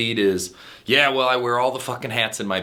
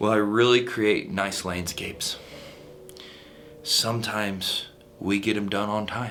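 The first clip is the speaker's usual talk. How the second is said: soft, listless, unenthusiastic, low-energy voice; 5 dB quieter than usual. Coaching on sales pitches, demonstrating an unenthusiastic landscaper: low-energy sales pitch. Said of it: "Do you want to buy from somebody that's like".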